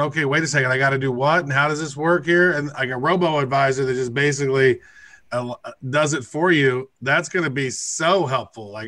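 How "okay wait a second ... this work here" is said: ordinary delivery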